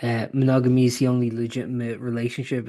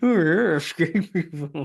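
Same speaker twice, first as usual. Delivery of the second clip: put-on fancy top-hat gentleman voice, higher pitch; 5 semitones higher than usual. Imitating the voice another speaker just used: imitating a fancy gentleman voice. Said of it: "Who was that voice?".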